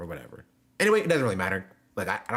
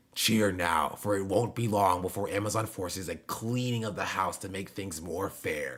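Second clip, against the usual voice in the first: dramatic anime-villain voice; 2 semitones lower, 4 dB quieter than usual. Rereading a chat comment aloud: anime villain voice. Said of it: "why does he talk like an anime villain?".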